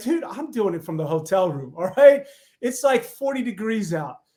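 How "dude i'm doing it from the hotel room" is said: mock brash, self-assured, offhand boastful tone. Retelling his reply to the local tv station, as his cocky past self. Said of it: "cocky me was like".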